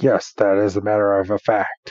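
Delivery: mock half-asleep voice. Retelling the professor's answer to a question, imitating a half-asleep voice. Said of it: "half asleep, for goodness sake".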